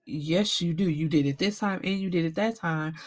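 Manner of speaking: ordinary delivery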